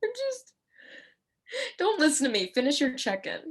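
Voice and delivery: tearful, crying voice, high and swooping. Asked why she is crying during a check-in: crying. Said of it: "Why are you crying?".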